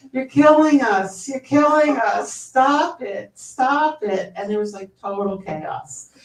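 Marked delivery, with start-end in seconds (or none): 0.2-4.4 put-on loud, high scream in a New Jersey accent. Speaker retelling a man at a die-in yelling at the cardinal, retelling Michael Petrellis's New Jersey scream. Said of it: "screaming in his New Jersey accent".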